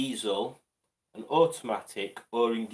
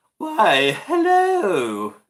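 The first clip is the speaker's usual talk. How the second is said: put-on posh voice, very high, very loud, shrill, swooping; 11 semitones higher, 11 dB louder than usual. Trying Simone's voice without any practice, a Simone posh voice impression. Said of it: "Was that posh enough?".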